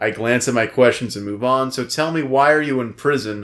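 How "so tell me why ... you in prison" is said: ordinary talk, nothing marked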